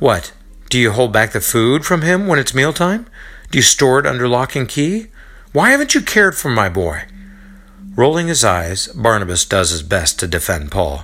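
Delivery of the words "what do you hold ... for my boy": scornful, accusing, sneering, pitched high. Narrator reading a mother sneering at her son's friend, accusatory and sneering. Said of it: "With an accusatory tone, she sneers at Paul".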